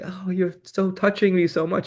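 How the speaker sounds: tender, sweet delivery. Demonstrating how voice and movement express feeling, tender and sweet. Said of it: "my voice is getting tender and sweet".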